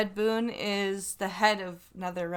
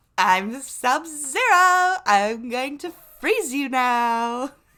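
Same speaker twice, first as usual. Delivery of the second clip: put-on flamboyant voice, pitched higher; 5 semitones higher, 7 dB louder than usual. Picturing Sub-Zero with a different voice: flamboyant Sub-Zero voice.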